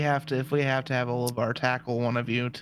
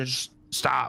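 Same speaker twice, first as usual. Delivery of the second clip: big, loud booming voice like thunder. Speaking in character through a magic spell: big booming voice like thunder. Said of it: "a big, loud, booming voice, like thunder".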